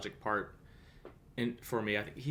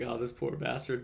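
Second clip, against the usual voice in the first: ordinary delivery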